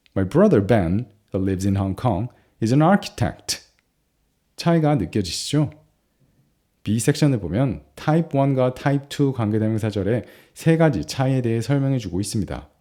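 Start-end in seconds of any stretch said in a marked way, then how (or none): 0.1-3.6 low, quick, lightly skimmed tucked-in aside clause. English grammar lesson example sentence: relative clause lower, slightly faster. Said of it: "관계대명사절에서 톤이 낮아지고 조금 빠르게 말하면서 흘러넘어가는".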